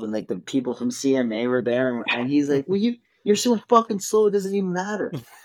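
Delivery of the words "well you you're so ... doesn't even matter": acted, shrill, very high-pitched scornful scream. Retelling a quarrel while changing a tire: imitating dad screaming. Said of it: "we're screaming at each other".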